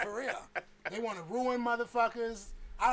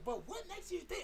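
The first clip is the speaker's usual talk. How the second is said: high-pitched, sassy tone full of attitude; 8 semitones higher, 7 dB quieter than usual. Retelling a discussion with his wife: imitating wife's attitude. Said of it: "sometimes they get that attitude, like".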